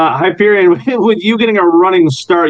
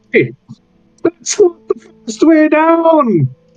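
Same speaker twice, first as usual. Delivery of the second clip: very high, slow jeering taunt, "down" drawn out; 10 semitones higher than usual. Voicing a halfling heckling a slow climber: heckling halfling. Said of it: "this little halfling heckling you".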